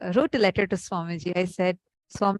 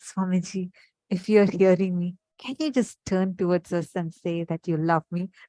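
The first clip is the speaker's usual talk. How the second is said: whisper, lower pitch; 2 semitones lower than usual. Retelling words whispered to the Atmalinga, addressed to Swamiji, re-enacting a whisper. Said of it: "I just whispered like this".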